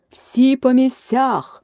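booming, thundering shout, pitched high. Reading a story about Alice, the narrator voices the queen's thundering shout. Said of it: "громовим голосом закричала королева".

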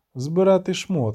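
ordinary delivery

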